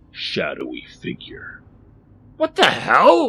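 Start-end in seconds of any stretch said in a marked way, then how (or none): 2.4-3.3 very high, very loud, shrill gasped cry. Suddenly face to face with a hulking, shadowy figure, he is gasping. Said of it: "Rodney managed to gasp".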